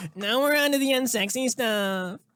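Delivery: put-on Valley Girl accent, pitched high.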